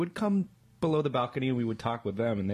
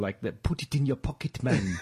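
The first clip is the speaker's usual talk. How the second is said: put-on South African accent, bad-sounding imitation. Discussing accents that are hard to do, demonstrating a South African accent. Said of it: "doesn't that sound like someone doing a bad accent".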